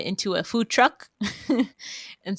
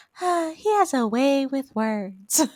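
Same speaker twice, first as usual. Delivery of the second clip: very slow character voice, pitched up, every word stretched; 7 semitones higher, 3 dB louder than usual. Retelling a line from the talent show: Sandy impression. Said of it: "then Sandy's like".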